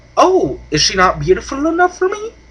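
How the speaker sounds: very high, sing-song, swooping leprechaun voice. Retelling a comedy's scene, giving the leprechaun's line in a leprechaun voice. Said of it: "my impersonations aren't all that great".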